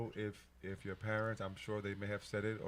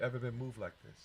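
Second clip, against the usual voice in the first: deeply moved, choked-up, emotional delivery. Saying this is the first show that has moved this much: getting emotional. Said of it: "I'm really getting emotional".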